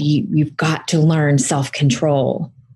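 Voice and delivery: mock harsh voice, put-on harsh tone. Retelling what a teacher said after grabbing them, in a really harsh voice. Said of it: "with a really harsh voice".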